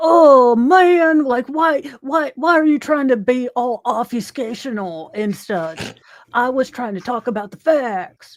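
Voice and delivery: mock dudebro voice. Unable to do a boston accent, going for a douche bro voice instead. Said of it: "I just went for the the douche bro".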